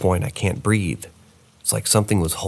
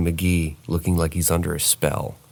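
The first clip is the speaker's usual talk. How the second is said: ordinary talk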